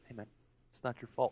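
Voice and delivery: put-on loving voice. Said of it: "just in this loving way".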